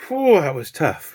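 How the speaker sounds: out of breath. Having just finished fitting the canvas onto the ring: out of breath. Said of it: "Bloody out of breath now".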